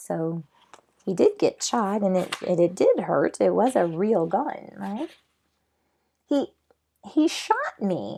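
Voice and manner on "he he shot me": stunned, drawn-out, swooping, pitched-up disbelief. Reading a story aloud, a character says he was shot: shocked voice. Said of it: "in a shocked voice".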